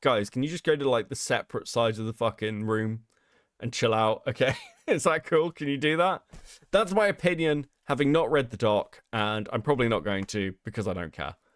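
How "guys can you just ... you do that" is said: ordinary talk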